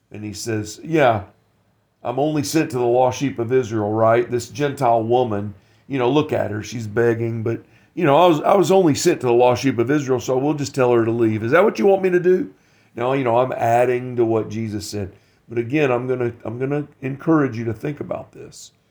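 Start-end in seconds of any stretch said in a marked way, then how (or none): none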